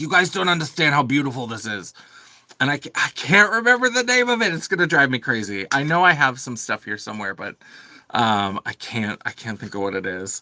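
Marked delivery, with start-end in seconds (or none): 0.0-1.9 put-on heavy New Jersey accent, laid on thick. Speaker quotes a woman from Jersey showing off a paint color, in a thick Jersey accent. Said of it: "she would have this thick Jersey accent".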